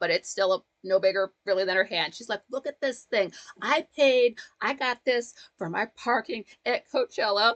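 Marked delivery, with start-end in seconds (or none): 2.5-7.5 acted voice on the verge of tears, choked up. Retelling a video of a girl holding a parking pass: imitating someone on the verge of tears. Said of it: "you can tell she's on the verge of tears".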